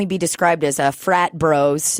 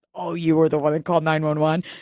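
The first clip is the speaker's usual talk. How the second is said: mock chuckle under the breath, snickering; 3 dB quieter than usual. Retelling a buddy's remark about the 911 call, imitating a chuckle under the breath. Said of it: "his buddy chuckles under his breath".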